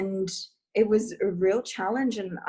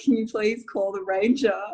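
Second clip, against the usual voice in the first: mock pleading through tears, tearful and begging. Retelling begging a best friend to call the ranger: retelling a crying plea.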